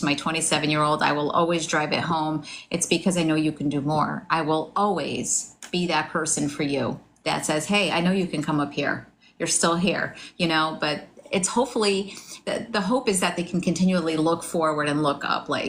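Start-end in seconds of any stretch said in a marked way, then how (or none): none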